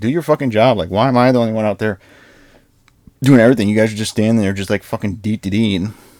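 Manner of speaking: ordinary talk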